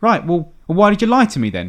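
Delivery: put-on scolding teacher voice. Retelling how a woman gave a girl grief over a pass, imitating a scolding teacher. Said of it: "she's giving her grief as if she's like um like a teacher".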